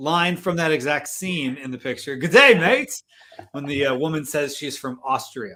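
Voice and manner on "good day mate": put-on bright, raised Australian accent. Quoting a movie character's line to a woman, in an australian accent. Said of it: "he gave a Australian accent".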